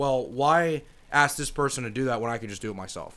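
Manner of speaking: plain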